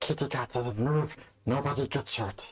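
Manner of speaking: whispering in high voice. Game master voicing a figure pressing a dagger into a player's back, high-pitched whisper. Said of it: "a high-pitched voice whispers in your ear".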